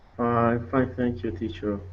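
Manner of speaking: very quiet, weary, tired voice. A student answers the teacher's greeting in a tired voice. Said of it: "You sound tired".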